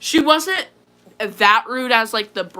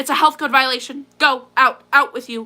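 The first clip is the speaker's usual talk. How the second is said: mock snotty, rude tone, pitched higher; 3 semitones higher than usual. Retelling what a manager said about the dog: imitating a snotty manager. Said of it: "the manager came out and was super snotty".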